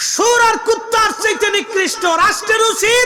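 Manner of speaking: fiery, impassioned shout in a preaching style.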